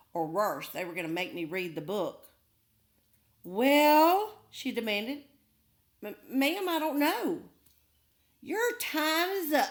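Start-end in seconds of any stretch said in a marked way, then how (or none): 8.4-9.8 slow, high-pitched hiss. Narrator reading a woman's line to the story's narrator, hissed. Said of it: "she hissed".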